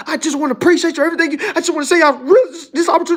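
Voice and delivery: stumbling, emotional gushing. Imitating people who thank the speaker for an opportunity: imitating someone getting emotional. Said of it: "I don't need you to be emotional".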